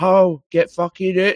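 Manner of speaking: play-acted furious yell, very high, long drawn out. Retelling how the woman behind the counter shouted at a man: imitating her shouting. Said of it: "started shouting at him".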